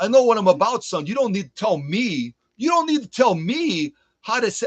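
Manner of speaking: put-on Brooklyn accent, loose and patchy. Imitating friends from new york boasting about knowing the job: brooklyn accent. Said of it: "I'm kinda doing a Brooklyn accent".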